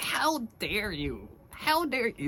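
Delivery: high, thin fake voice. Picturing Viserys jumping off his horse, doing his line in a shrill voice. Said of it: "this shrill little bitch voice".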